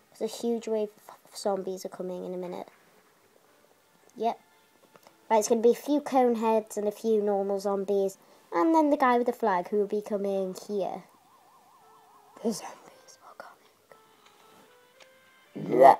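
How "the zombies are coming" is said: bad, breathy, whispered zombie voice. Playing a zombie game, doing a zombie impression: zombie impression. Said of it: "That was my zombie impression".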